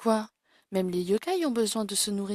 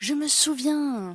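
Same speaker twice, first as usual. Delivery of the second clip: high cry, shouted at full voice; 5 semitones higher, 4 dB louder than usual. A character shouts, prompting another to ask why they shout: shouting. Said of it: "Mais pourquoi tu cries comme ça?".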